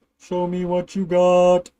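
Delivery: slow, flat put-on robot voice.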